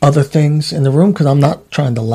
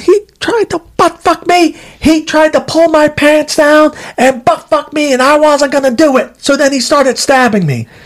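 shrill, very high-pitched shrieking holler; 12 semitones higher than usual. Retelling what a man yelled, imitating someone yelling. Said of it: "And he yells".

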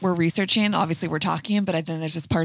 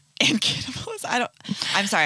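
chuckling, laughing through the words; 4 semitones higher than usual. Reacting to the word cannibalism in a story, laughing while talking. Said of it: "I need to stop laughing at cannibalism".

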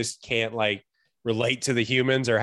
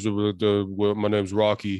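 muffled, mumbling shark voice; 4 semitones lower than usual. Describing a mumbling shark character, doing his line in a mumbling voice. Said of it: "the guy that talks like this".

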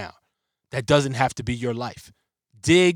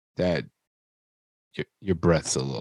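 very low, muttered aside under the breath; 9 semitones lower, 4 dB quieter than usual. Retelling a daughter's remark about breath: imitating someone saying it under breath. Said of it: "she kinda said it under her breath".

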